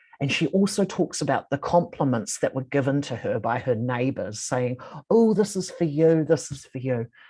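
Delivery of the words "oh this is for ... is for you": put-on, scornful, belittling mocking tone. Quoting a care worker retelling her neighbours' compliments: imitating a mocking tone. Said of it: "in a sort of mocking tone".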